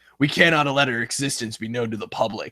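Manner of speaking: gruff-sounding American voice. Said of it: "the second line".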